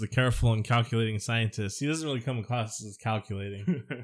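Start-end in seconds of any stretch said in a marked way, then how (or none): none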